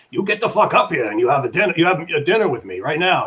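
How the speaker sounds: put-on serious New York accent.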